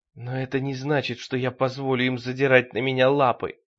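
plain

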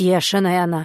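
spoken through gritted, clenched teeth. Parasha answers Polya's demand to know what is going on, through gritted teeth. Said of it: "скрипя зубы".

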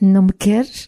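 usual speaking voice

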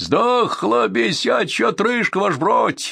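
very high, joyful, cheerful shout, drawn out. A Cossack calls to the officer after poking the dead wolf, cheerful exclamation. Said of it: "весело воскликнул".

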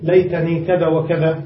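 plain

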